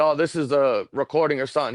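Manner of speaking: ordinary talk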